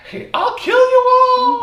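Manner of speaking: very high, shrill, raving monster shriek. Joking about a show's Halloween episode monster, mock monster scream. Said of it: "Is what he's screaming".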